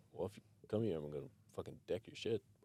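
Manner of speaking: irritated, blunt, annoyed delivery. Retelling a threat made to a would-be robber: imitating own irritated threat. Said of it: "I'm just irritated".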